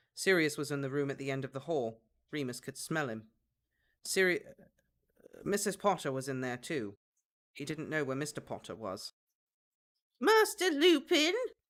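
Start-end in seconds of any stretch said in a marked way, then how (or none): 10.2-11.4 very high, loud, squeaky elf-like character voice. Reading a story, Gully calls to Master Lupin from the stairs, squeaky Gully voice. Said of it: "A squeaky voice startled him".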